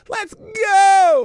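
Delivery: hyped, very loud, high, drawn-out yell. Kicking off the friday q and a with the chat: yelling. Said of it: "am I yelling again?".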